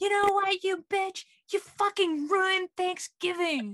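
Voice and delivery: high, shrill, mock top-of-the-lungs screaming. Retelling how a woman in a parking lot screamed at them, imitating a woman shouting. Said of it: "at the top of her lungs".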